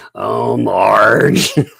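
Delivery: put-on smoker's voice. Comparing someone's speech to cartoon characters: Marge's sisters voice. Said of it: "with Marge's sisters? You know, the two smokers?".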